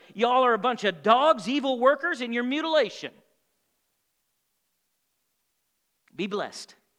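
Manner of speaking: mock sarcastic delivery. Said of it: "All sarcasm intended".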